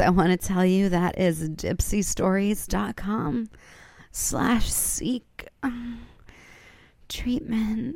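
sultry, seductive voice. Host repeating the sponsor's web address one last time, in sexiest voice. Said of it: "that's in my sexiest voice".

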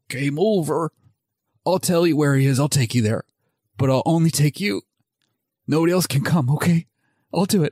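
very weak, feeble, strengthless voice. Retelling a film scene, Jigsaw answering the detective holding a gun: imitating Jigsaw very weakly. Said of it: "And Jigsaw very weakly goes".

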